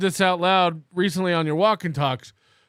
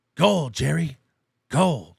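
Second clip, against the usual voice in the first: rough, creaky, raspy comedian-style character voice; 3 semitones lower than usual. Doing a Kenny Bania voice about a joke bit: Kenny Bania voice. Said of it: "We should do a Kenny Bania voice".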